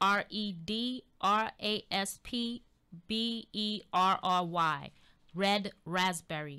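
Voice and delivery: slow, careful spelling-out.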